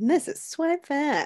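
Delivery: game show announcer voice. Reintroducing the show's name to listeners, game show host voice. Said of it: "I wanted to say it like a game show".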